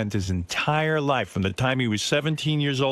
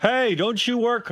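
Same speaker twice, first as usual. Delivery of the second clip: yelled shout, pitched higher; 10 semitones higher than usual. Retelling calling out to a friend in the park: retelling own yell. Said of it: "I yell out to her".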